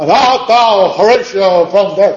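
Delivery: dignified high-pitched cry. Showing how an actor delivers a Hamlet line by shouting it. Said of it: "Gritándolo".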